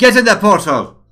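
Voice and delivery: high, loud shout.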